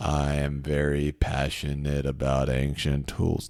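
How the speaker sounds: low-energy flat drone, very deep and very slow. Showing how writing sounds without passion: low-energy delivery. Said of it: "not like low energy. Otherwise, you sound like".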